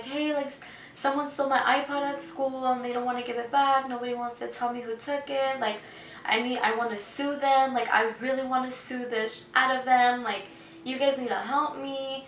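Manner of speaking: play-acted tearful crying with a pleading tone. Retelling a call to 911 about an iPod stolen at school: retelling crying on the phone. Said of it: "I was still crying and I was telling".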